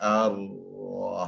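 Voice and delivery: slowed-down ar-rah with rounded lips. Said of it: "doing slow motion".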